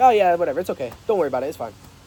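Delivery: dismissive, careless, offhand tone. Speaker demonstrating the wrong tonality for saying it's okay, dismissive, careless tone. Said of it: "It's the tonality. It's how you say it. It's not like".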